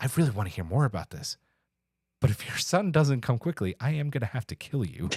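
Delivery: put-on deadpan delivery. Quoting a character's line from the episode: imitating a deadpan delivery. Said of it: "It is so deadpan".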